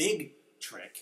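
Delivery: heavy stress on both words "big trick". Reading out a question and repeating the phrase with emphasis: emphasizing 'big trick'. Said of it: "put some emphasis on that word".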